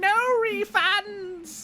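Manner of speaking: very high, cackling put-on peddler voice. Game narrator voicing a figure heard over the gusting winds: cackling voice. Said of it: "You hear a cackling voice over the gusting winds".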